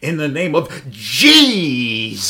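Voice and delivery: loud, slow, theatrical faith healer proclamation. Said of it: "when they're going".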